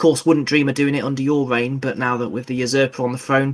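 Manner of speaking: usual speaking voice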